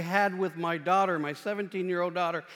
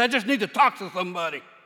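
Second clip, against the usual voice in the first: heavy, rough, very gruff delivery; 5 dB louder than usual. Quoting the stranger who scared the speaker, in a very gruff voice. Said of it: "he said in a very gruff voice".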